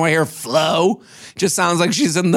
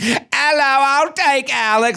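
put-on clumsy Australian accent, high, slow, "I'll" stretched out; 8 semitones higher than usual. Retelling an Australian woman's arrival in a storyline: Flo impression, bad Australian accent. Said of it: "This is my shitty Australian accent".

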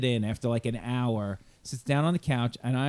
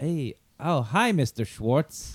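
very slow, drawn-out, friendly voice. Retelling how father greeted the cat at the door: imitating father greeting cat like a person. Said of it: "My father would answer the door like it was a person".

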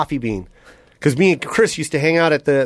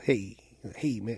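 put-on very cool voice, lower and quieter; 6 semitones lower, 14 dB quieter than usual. Retelling meeting Eddie Murphy, who turned and greeted him: imitating Eddie Murphy, so cool. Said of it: "just so cool, man".

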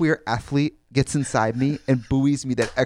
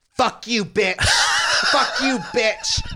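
mock very high, wild, swooping abusive shrieking; 11 semitones higher than usual. Telling about a visitor waiting at the gate, imitating a woman screaming outside. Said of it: "some lady is screaming".

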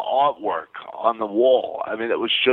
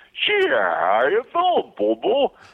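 high voice swinging around in pitch; 11 semitones higher than usual. A voice performer recalls doing an album as Yogi Bear, Yogi Bear voice. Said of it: "I did the voice of Yogi Bear".

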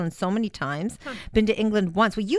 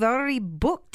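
terrible put-on Scottish accent, higher; 4 semitones higher than usual. Announcing a mother-daughter trip to Scotland: bad put-on Scottish accent. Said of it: "Am I doing a good job with the accent?".

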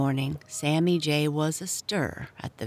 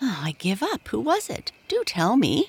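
imploring, wheedling, high with swooping pitch; 7 semitones higher, 3 dB louder than usual. A character who has given up guessing asks another to tell him: begging. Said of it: "begged Happy Jack".

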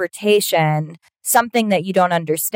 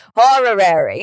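put-on horary, old man Yiddish-inflected accent.

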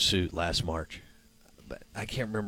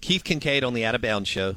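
ordinary delivery

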